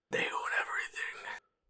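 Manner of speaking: creepy, hushed, breathy, weird whisper. In a chat about Disney owning Fox and Marvel, weird, creepy voice. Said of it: "I was saying it in a weird, creepy voice".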